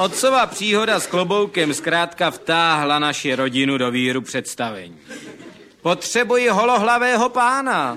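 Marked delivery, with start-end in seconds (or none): 5.8-8.0 very high-pitched showman's voice, calling out. A magician in the circus ring looks for a volunteer in the audience: calling out from the ring. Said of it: "zvolal z manéže kouzelník".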